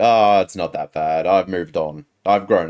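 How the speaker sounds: ordinary delivery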